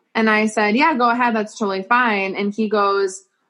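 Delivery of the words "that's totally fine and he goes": ordinary talk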